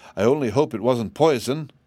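usual speaking voice

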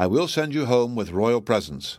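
plain reading voice

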